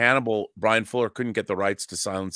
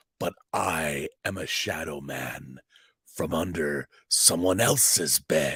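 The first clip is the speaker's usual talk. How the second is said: subdued, low, quiet creature voice; 5 semitones lower, 3 dB quieter than usual. Retelling the end of an episode as the Shadow Man speaks; subdued Shadow Man voice. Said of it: "I was a little bit more subdued with my Shadow Man voice".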